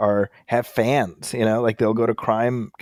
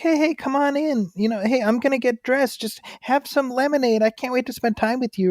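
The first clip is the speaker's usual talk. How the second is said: very high, coaxing put-on teen voice. Retelling how a decoy greeted visitors: imitating a decoy posing as a teen. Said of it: "an adult who could pass for a teenager or a child being like".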